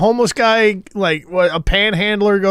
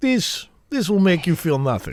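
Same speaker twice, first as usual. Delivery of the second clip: put-on soft, generic Eastern European accent; 2 semitones lower, 5 dB quieter than usual. Retelling what a man with a Kremlin tattoo said, in a generalized Eastern European accent. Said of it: "it's a generalized Eastern European".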